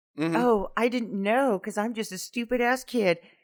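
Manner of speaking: put-on high, innocent, dumb-kid voice. Speaker retelling a kid's reply to a police officer, playing an innocent dumb kid. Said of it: "gives him the old".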